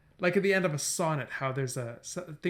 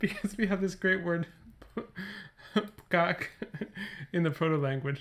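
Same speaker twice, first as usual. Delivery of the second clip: laughing and giggling through words; 3 semitones higher, 3 dB quieter than usual. Making up a silly memory sentence, laughing while talking. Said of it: "I don't know why I'm laughing so much".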